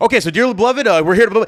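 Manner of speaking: high, rushed, hurried, words tumbling out. Retelling the officiant rushing the ceremony in the rain, imitating fast rushed talking. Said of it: "He started talking fast".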